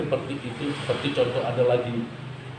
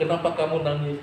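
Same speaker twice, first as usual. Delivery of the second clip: plain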